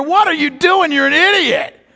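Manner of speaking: high-pitched mock yell. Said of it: "I was yelling at myself in the mirror".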